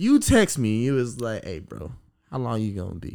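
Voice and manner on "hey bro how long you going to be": very low, hushed, soft, sexy velvet voice. Retelling a text from a friend, imitating Robert's sexy velvet voice. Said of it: "That super sexy velvet voice".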